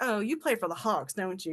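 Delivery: imitated sarcastic tone. Retelling meeting a basketball player: imitating her own sarcastic tone. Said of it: "'cause I'm sarcastic".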